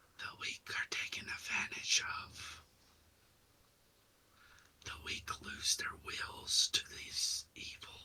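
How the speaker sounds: whispering voices. Voicing whispers in a character's head during an illusion: whispering voices. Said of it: "You just hear whispers in your head".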